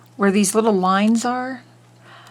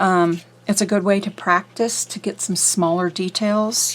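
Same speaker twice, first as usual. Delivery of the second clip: usual speaking voice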